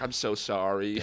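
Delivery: tearful, sobbing, crying voice. Retelling how a girl apologized across the fire: imitating someone crying. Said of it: "crying at the other side of the fire".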